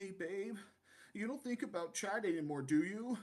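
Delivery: mocking, teasing voice. Retelling what Chaz asked his girlfriend, a mocking imitation of Chaz. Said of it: "let me do my imitation".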